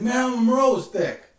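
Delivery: high, loud, emphatic, insistent tone.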